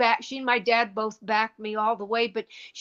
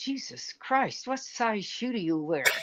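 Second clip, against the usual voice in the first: mimicked mutter under breath, quieter; 6 dB quieter than usual. Retelling what the man fitting the shoe said: retelling a mutter under breath. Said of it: "He says under his breath".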